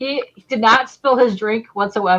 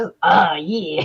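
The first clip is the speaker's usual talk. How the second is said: put-on seductive pirate voice, slower; 3 semitones lower than usual. Describing how a book character talks, sexy pirate voice. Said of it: "like sexy pirate".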